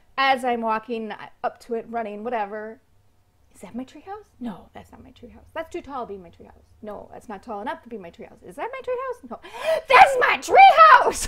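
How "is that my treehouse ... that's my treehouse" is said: put-on excited voice, higher and louder. Retelling finding a lost treehouse in the jungle: retelling own excited discovery. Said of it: "Sorry, but I was just so, so excited".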